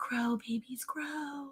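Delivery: very quiet, soft, high whispered coaxing. Retelling own words to something being coaxed to grow: imitating a whisper.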